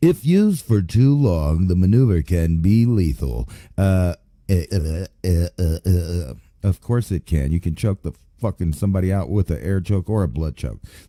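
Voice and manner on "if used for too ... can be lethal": public radio news announcer voice. Reading a passage aloud to listeners, switching into an NPR voice. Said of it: "Do I need to go into the N P R voice?".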